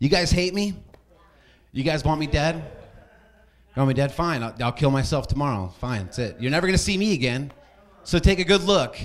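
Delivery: put-on spoiled rich-kid voice with a begging tone. Stand-up comic acting out a rich kid asking his parents for money, rich kid impression. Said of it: "That's my impression of a rich kid asking his parents for money".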